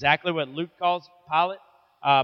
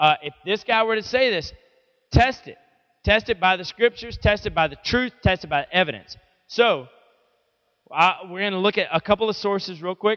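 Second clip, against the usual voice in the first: usual speaking voice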